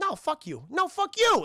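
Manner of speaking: very high, tough, forceful New York accent, drawn out. Critiquing actors' submissive performances, showing how the line should go, forceful New York accent. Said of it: "Very New Yorker".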